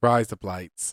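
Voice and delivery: put-on Australian accent. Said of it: "Say it".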